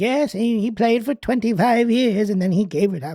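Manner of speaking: mock elderly woman voice. Recalling an old lady at the music shop where they worked, imitating an old lady. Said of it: "She's like".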